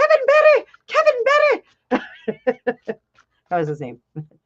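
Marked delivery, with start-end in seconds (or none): 0.0-3.0 put-on very high, very slow, sing-song Irish accent. Speaker imitates a school friend's Irish mother calling her son, high-pitched Irish accent. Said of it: "my Irish accent is always very high because she'd go".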